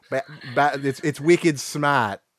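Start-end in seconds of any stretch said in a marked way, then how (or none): 1.0-2.2 put-on, mock Boston accent. Trying out a Boston phrase after mocking another's accent: put-on Boston accent. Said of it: "Your Boston accent is terrible".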